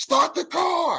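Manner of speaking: put-on very high, frantic screaming. Retelling a movie scene of men running from the woods: imitating someone screaming.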